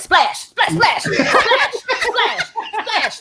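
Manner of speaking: high, laughing mock yell. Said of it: "every time she yelled".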